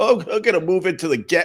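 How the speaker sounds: dumb-sounding hipster voice. Mocking hipsters who move into gentrifying neighborhoods: mocking hipster voice.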